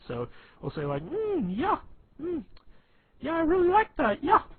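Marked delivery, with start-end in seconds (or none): 1.0-4.4 very high-pitched, loud, idiotic-sounding voice. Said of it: "that's our Adam voice".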